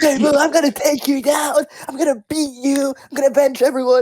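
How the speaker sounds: mock very high, reined-in yell. Retelling a character yelling at boo's house at night: imitating quiet yelling. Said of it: "yell in lowercase".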